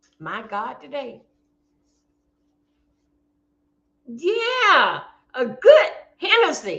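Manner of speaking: teary-eyed, close to tears. Talking to the audience about a lost Hennessy bottle: teary-eyed. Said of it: "I'm getting teary-eyed".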